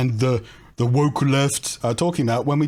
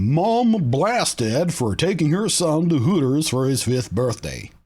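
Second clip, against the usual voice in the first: half-hearted, lazy, vague fake American accent; 2 semitones higher than usual. Reading a New York Post story aloud in a lazy fake American accent. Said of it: "Sorry for the lazy attempt at a vaguely American accent".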